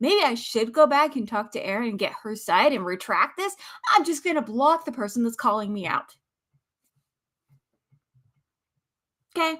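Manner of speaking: heated, angry, worked-up, fired-up rant. Speaker criticizing someone who blocks the person calling them out: a little heated. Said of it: "I'm a little heated".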